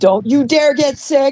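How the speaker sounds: mock bossy scolding, yelled. Retelling being pushed to drink while feeling sick, imitating Carrie yelling. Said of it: "And she's yelling at me".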